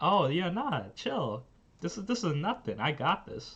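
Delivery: play-acted, calm, sweet, easygoing sing-song voice. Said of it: "in her this calm, sweet voice".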